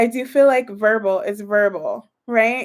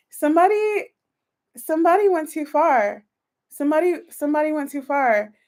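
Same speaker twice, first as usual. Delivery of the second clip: moved, emotion rising in the voice, pitched up; 6 semitones higher than usual. Partway through a reading, the reader is getting emotional. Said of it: "I haven't gotten emotional in my reads".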